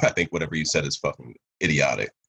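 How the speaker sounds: ordinary talk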